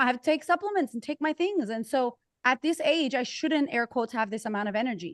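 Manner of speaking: normal talking voice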